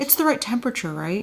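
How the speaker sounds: soft, very concerned, deeply worried, careful voice. Describing a woman on screen with a dog, mock-concerned voice. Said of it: "Like in this very concerned voice".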